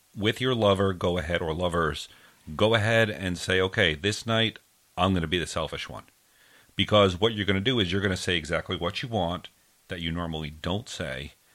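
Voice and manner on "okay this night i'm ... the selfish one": ordinary delivery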